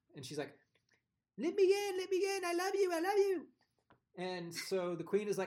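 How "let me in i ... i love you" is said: really bad English accent, very high, very loud, drawn out. Retelling a film scene, banging on a castle door, bad English accent as Rachel Weisz. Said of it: "I'm going to use a really horrible English accent".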